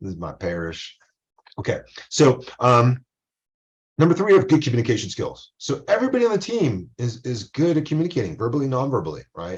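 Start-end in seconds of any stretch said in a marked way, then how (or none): 0.0-1.0 soft Southern drawl with Louisiana accent. A speaker presents to a group in character, in a Louisiana Southern drawl. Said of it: "I'm gonna speak in the Southern drawl, a Louisiana accent".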